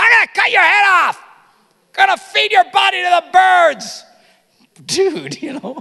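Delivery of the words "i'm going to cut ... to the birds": very loud, high-pitched, booming yell. Retelling how a gutsy guy yelled at a much bigger man; retelling a yell. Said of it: "he's yelling at this guy".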